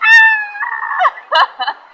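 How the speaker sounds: mock scream, high pitched and loud. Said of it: "like, screaming".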